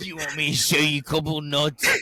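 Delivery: loud, high, flirtatious put-on British accent. Comparing how Australian and British people flirt, imitating a British accent. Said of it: "then the British British person's like".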